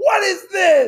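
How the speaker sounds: very high, shrill, furious shout. Retelling how Kate yelled at him from upstairs, retelling Kate's yell. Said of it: "Kate's yelling at me like".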